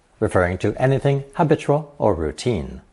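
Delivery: ordinary talk, nothing marked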